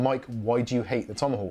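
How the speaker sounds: usual speaking voice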